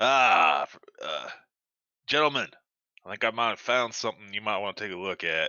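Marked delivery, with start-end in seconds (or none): 2.1-5.5 put-on slipped into a Southern accent. Calling the other players over to a find: slipped into Southern accent. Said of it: "you just switched your accent".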